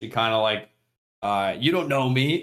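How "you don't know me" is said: acted-out high, hostile, aggressive in-your-face outburst. Retelling a girl's reaction to a friendly greeting: imitating an aggressive outburst. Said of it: "very aggressively".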